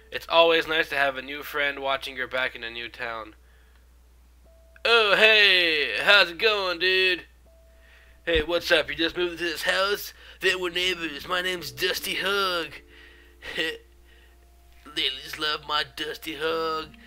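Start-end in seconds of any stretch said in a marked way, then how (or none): 4.9-16.9 rough biker guy voice. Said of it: "He's a dirty, rough biker guy".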